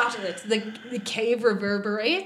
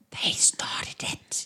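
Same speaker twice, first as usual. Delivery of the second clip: hushed, soft, breathy whisper. Character leans round to the others and whispers. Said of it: "then she's going to whisper".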